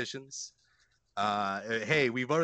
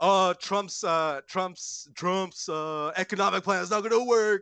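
high, loud, stammering, nerdy mocking voice; 7 semitones higher, 5 dB louder than usual. Retelling a compilation of people being mocked, imitating a mocking voice. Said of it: "him mocking people".

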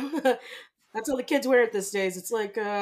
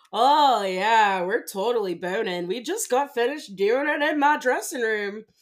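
put-on sarcastic tone, slow drawl. Acting out a sarcastic reply that is secretly true: put-on sarcastic tone. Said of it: "say it sarcastically".

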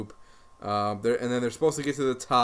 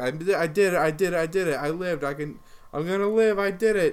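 acted-out excitement, much higher and slower; 7 semitones higher than usual. Retelling a producer who reaches the top and jumps into a ball pit: retelling someone all excited. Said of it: "she's all excited that she's going to live now".

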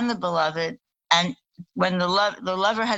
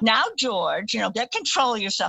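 put-on tipsy, quarrelsome voice; 3 semitones higher than usual. Retelling drunk parents having a fake argument: imitating a drunk mom's fake argument. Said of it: "her mom would be going".

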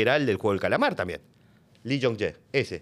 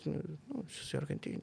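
barely audible, very quiet near-whisper; 4 semitones higher, 15 dB quieter than usual. Retelling answering what production company one is from: imitating own quiet voice. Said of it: "Así, ¿viste? Bajito".

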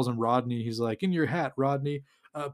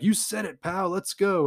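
put-on excited yelling, slower pace; 5 semitones higher than usual. Retelling how a group of girls reacted, retelling excited yelling. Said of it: "And they're all yelling".

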